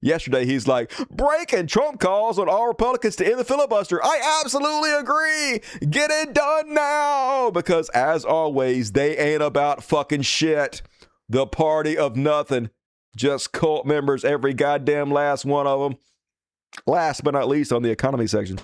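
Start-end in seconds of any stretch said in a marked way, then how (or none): 1.1-7.5 shrill, very high put-on voice, "now" drawn out. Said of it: "here's a maga voice".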